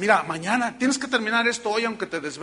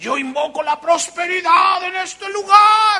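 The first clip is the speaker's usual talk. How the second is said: shrill preacher-style cry, very loud, high, rising; 12 semitones higher, 10 dB louder than usual. Retelling how the pastor anointed the new place, retelling his shouting.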